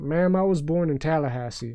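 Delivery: ordinary talk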